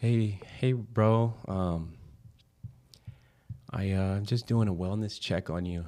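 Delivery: put-on, slow, very sweet voice. Retelling a sister's phone call checking on the speaker: imitating a sweet voice. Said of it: "with the sweetest voice".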